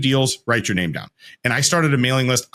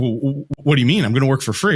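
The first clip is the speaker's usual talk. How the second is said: put-on, acted shocked tone. Retelling own reply after the free offer was turned down: imitating own shocked reply. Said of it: "shocked that my free labor was too expensive".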